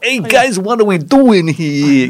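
drawn-out New York accent. Mimicking how some film robots talk, Transformers robot, New York accent. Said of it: "kind of talk like this from like, New York".

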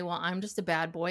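ordinary delivery

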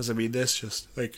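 words stretched out by a yawn. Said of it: "I'm sorry, I'm yawning".

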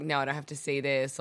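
ordinary delivery

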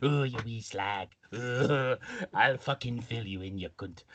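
full put-on old man voice. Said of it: "I can put [name] in the Trevor Slater voice".

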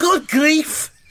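very high-pitched put-on Liverpool Scouse accent. Telling a story about a match, voicing a teammate's exclamation, put-on scouse accent. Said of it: "I'll give him a Scouse accent as well".

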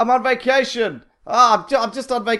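shrill, very high, stretched-out, drawn-out yelling. Retelling a film hero crashing into cars, imitating someone yelling. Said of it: "yelling out".

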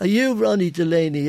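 put-on Irish Dublin accent. Retelling what a guy said on seeing him, in a real Dublin accent. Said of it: "a real Dublin accent".

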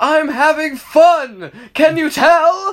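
very high, very slow, over-the-top hammy drawl. Recounting a game fight where Cortex calls to Crash, over-the-top dramatic Cortex voice. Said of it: "the most over-the-top dramatic voice".

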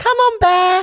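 put-on very high, loud calling shout. Retelling calling a dog named Bear: imitating own shouting at dog. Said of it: "when I'm shouting on, out".

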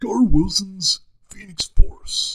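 booming, loud, very high movie-trailer announcer voice. Announcing an audiobook title after warming up: movie trailer guy voice. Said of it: "I gotta get my trailer guy voice".

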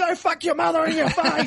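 aggressive mock snarl with laughter.

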